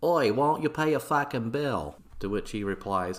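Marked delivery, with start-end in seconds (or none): 0.0-2.0 put-on Boston accent, bogan-sounding, hollered. Recapping a story, voicing a man demanding another pay a bill, in a fake Boston accent. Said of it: "my fake Boston accent sounds like some kind of Australian bogan accent".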